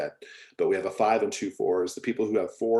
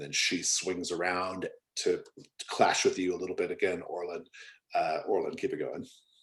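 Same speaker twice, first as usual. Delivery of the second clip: ordinary talk, nothing marked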